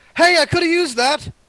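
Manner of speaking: shouting, loud and high.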